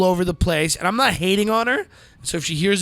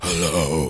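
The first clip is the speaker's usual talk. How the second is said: very deep voice, dropped very low; 14 semitones lower than usual. Showing someone how they should talk, deep voice. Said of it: "Deep voice".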